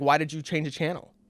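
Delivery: put-on irate, confrontational, angry tone. Retelling a story, quoting the other guy who came to their table, mock-angry. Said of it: "he's all angry".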